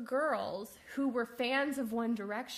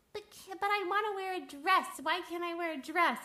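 high, taunting, mocking put-on voice; 7 semitones higher than usual. Retelling a woman's video about a post; retelling her mocking voice. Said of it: "she did this mocking voice in her video".

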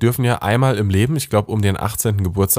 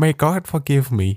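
clumsy, slow, bad put-on Midwestern American accent; 4 semitones higher than usual. Acting out a pious person claiming never to have drunk: bad midwestern accent. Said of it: "mit so einem Midwestern-Akzent zu sprechen, aber ich bin wirklich schlecht".

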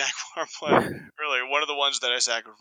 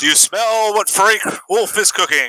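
high, pitched-up, put-on in-character battle yell; 6 semitones higher, 7 dB louder than usual. Acting out a character throwing a tourist to piranhas: yelling in character. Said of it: "and I yell".

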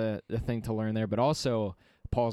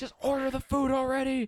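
very high-pitched, fed-up, irritated voice. Retelling phone calls where customers fight, imitating an angry wife. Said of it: "the wife is pissed".

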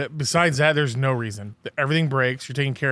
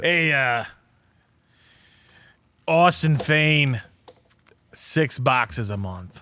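put-on very slow, old man New York voice. Retelling what Rudy said about cigar orders: Rudy impression, old New Yorker. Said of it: "Try to do my Rudy impression".

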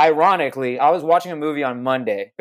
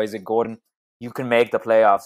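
bad put-on German accent, slower; 4 semitones lower than usual. Retelling what another man said, in a bad German accent. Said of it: "Apparently my German accent is terrible".

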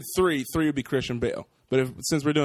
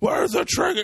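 put-on deep hero voice, squeaky and very high; 3 dB louder than usual. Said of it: "he pitched it".

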